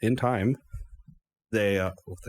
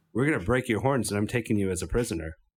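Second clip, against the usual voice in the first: plain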